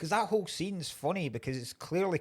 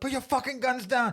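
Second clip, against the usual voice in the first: mock yelling in men's voices; 11 semitones higher, 4 dB louder than usual. Retelling a movie scene where six guys yell at each other: retelling a yell. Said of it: "because it's just about six guys yelling".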